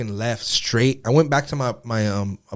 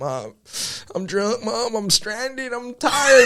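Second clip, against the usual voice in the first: put-on sobbing, very high, very slow, drawn out; 12 semitones higher than usual. Retelling how he pranks his mom on the phone, fake crying. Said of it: "I'll call her like fucking fake crying".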